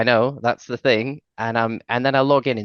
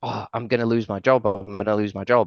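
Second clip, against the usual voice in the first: frantic, alarmed, panicky, worried tone. Retelling a colleague's late-night phone call: imitating someone panicking.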